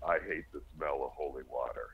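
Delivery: very deep, low, hushed, changed possessed voice. Retelling what the husband said after the holy water was sprinkled, imitating a deep voice. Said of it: "he turned and he looks at me in this deep voice".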